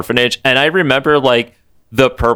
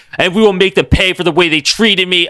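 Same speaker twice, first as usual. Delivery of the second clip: acted, all-out, full-force screaming, face to face; 8 semitones higher than usual. Retelling the Purple Man screaming in Rusty's face: imitating the Purple Man screaming. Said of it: "he screams in his face that he's like".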